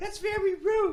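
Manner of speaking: mock girl voice, high and slow.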